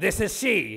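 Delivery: put-on older woman with a mannish smoker's voice. Imitating a grandmother who burnt out her vocal cords smoking: imitating grandmother's man voice. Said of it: "She'd be like".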